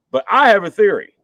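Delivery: ordinary delivery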